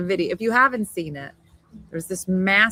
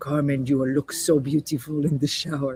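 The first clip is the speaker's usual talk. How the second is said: low, put-on sexy man voice; 5 semitones lower than usual. Talking to Carmen about her shower, putting on her sexiest man voice. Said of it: "think of my sexiest man voice".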